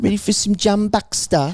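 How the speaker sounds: put-on British accent. Recalling the stage bit, repeating the line in a british accent. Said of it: "I always just break out in British accents".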